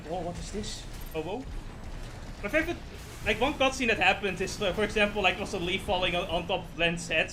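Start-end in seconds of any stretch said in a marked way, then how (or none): none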